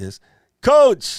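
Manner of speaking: sudden, very high-pitched shout. Spotting Coach after losing sight of him, the speaker calls out, yelling. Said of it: "Sorry, I just yelled".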